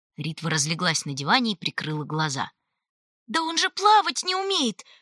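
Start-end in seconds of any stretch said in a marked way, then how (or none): 3.3-4.8 aghast, horrified cry, very high-pitched. A girl cries out about a companion, horrified. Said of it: "ужаснулась Титта".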